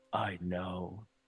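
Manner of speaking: deep, rough, gravelly voice. Reading a line where a figure speaks for the first time: deep gravelly voice. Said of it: "A deep, gravelly voice comes out of".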